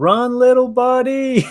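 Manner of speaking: very high-pitched, shrill scream at full volume. Retelling how she cheered at a touchdown: imitating someone screaming. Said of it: "she is screaming at the top of her lungs".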